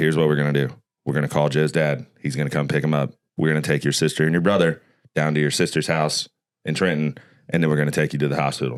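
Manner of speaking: mock unflappable, very calm, matter-of-fact, step-by-step delivery. Retelling a dad's plan after an injury: imitating dad speaking very calmly. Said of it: "calm as fuck".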